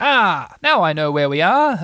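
loud, slow, triumphant, victorious declaration. Lost in the mist, one of the friends sees the sand pit again, triumphant. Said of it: "Rabbit said triumphantly".

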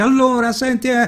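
very high voice projected to carry far. Showing how to call out in an outdoor dubbing scene: projecting the voice. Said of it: "in doppiaggio si dice "porta la voce"".

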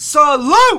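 mock high, loud, saluting cry.

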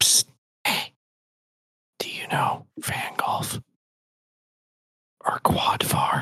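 dark, menacing, hushed whisper. Casting a spell so a voice whispers beside a guard: ominous whisper. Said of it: "create an ominous whisper".

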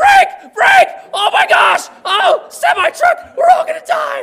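mock shrill, booming, high panicked shriek, slowly dragged out. Retelling learning to drive with mom: imitating mom panicking while driving. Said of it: "she's like".

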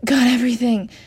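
out of breath. Rushing into the room with the bags, a young man speaks breathlessly. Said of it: "Jason said breathlessly".

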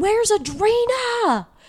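put-on drunk yell. Retelling how a drunk friend called out a question: imitating someone yelling. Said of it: "he was yelling at Emmy".

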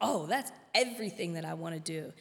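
usual speaking voice

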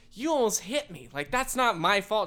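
high, indignant yelling. Retelling an argument with a driver who almost hit the speaker, retelling own yelling. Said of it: "And so I'm yelling".

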